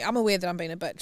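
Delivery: ordinary delivery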